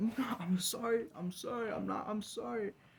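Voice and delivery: tearful, very high, crying, pleading tone. Recounting being against a wall in tears, the speaker reenacts their own crying apology. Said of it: "I'm crying and I'm crying".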